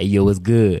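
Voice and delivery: dropped, very deep, put-on street-tough voice. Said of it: "I knew that I couldn't use my high-pitched voice".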